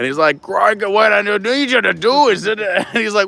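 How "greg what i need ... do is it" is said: put-on Scottish accent, air traffic controller voice. Retelling a comedy sketch about air traffic control: imitating a Scottish air traffic controller. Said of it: "the Scottish air traffic controller".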